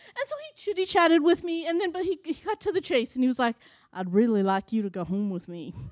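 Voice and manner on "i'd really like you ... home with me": put-on low-pitched Southern accent. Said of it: "he had a Southern accent".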